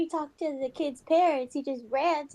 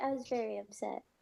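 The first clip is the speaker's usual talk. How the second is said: ordinary delivery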